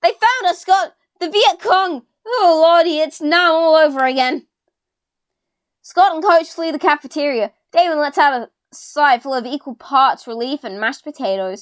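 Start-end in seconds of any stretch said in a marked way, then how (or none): 0.0-2.1 high-pitched, frightened yelling. Character in a cafeteria shouting to Scott, scared yelling. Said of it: "I'm yelling because I'm scared!".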